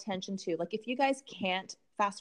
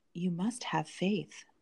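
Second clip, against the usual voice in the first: mock unhinged voice, lower; 2 semitones lower than usual. Recapping a show scene, speaker quotes a man answering an upset woman, mock psychotic voice. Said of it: "quoted like in his psychotic voice".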